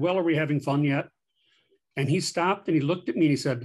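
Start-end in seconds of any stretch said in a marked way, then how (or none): 0.0-1.1 grumpy, dry, tired, sarcastic tone. Retelling a tired remark to a colleague in a hallway: retelling own sarcastic remark. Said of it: "I kind of sarcastically said".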